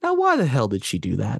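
simmering, passive anger kept under control. Complaining about why she did that, with passive, quiet anger. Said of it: "the passive, quiet anger in my voice".

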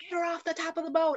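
put-on, high screaming at the top of his lungs. Retelling how the chief reacted to her vomiting: imitating the chief screaming. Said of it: "the chief started screaming at me".

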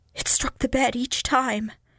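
scared, secretive whisper. A man goes on telling his listener what happened, in a scared whisper. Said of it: "Isaac went on in the same scared whisper".

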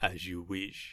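soft, beautiful, regal emperor-like voice. Describing a film's opening, quoting a character's reply in a Palpatine-esque voice. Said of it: "in a kind of beautiful Palpatine-esque voice".

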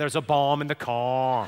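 Northern Irish Belfast accent. Teaching everyone to talk like Belfast, the speaker says the phrase in a Belfast accent. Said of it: "You are now all qualified to say".

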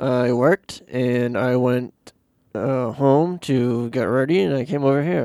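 very slow words through a frozen, locked jaw. Telling what you did today when asked: talking without moving the jaw. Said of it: "without moving your jaw".

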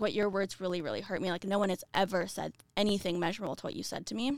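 ordinary talk

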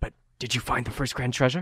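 speaking in a whisper. Voicing a character who whispers in the players' ears: whispering. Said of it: "he whispers in your ears".

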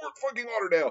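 sudden, very high-pitched yell. Retelling a movie scene where Tom Sizemore yells at Keanu Reeves: imitating someone yelling. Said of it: "Tom Sizemore just yells".

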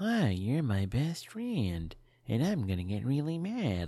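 slow, drawn-out evil killer-doll voice. Reacting to a movie, mocking how the doll sounds: imitating Mark Hamill's Chucky voice. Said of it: "what Mark is doing here so far is just making him sound like".

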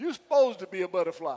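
Southern dialect. Showing the congregation how to say the line: Southern Morganton accent. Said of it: "Say it that way".

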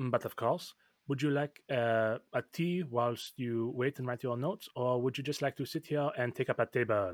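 put-on storybook fantasy-style French accent. A character replies to someone who asked him to go away, in a fantasy French accent. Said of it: "in fantasy French".

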